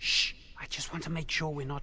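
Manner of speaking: hushed, whispered voice. A character who does not want to be overheard answers another, whispering. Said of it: "why are you whispering?".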